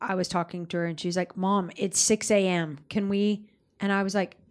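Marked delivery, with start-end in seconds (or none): none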